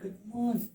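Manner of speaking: level, unvarying, flat cabin-crew style monotone. Imitating a flight attendant's unchanging greeting tone: imitating a flight attendant's monotone greeting. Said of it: "that tone never goes".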